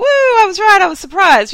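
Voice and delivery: excited whoop.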